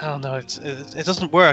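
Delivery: normal talking voice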